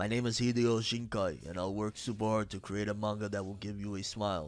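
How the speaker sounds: deep put-on voice, very low bass. Reading a manga author's comment aloud on a video, in a deep voice. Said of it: "I felt like saying it with a deep voice".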